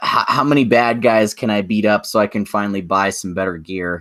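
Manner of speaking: usual speaking voice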